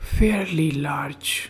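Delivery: hushed whispering. The narrator answers the bank manager about the size of his account, whispering. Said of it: "I whispered".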